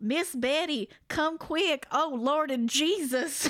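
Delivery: high, slow, drawn-out scream-like call. Retelling a ghost story: imitating someone screaming. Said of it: "Magadale starts screaming downstairs".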